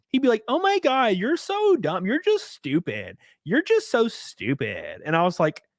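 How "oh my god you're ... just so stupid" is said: high, swooping, stretched-out effeminate voice. Acting out how a debater would respond half the time, in an effeminate Hasan Piker impression. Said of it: "This guy's real effeminate".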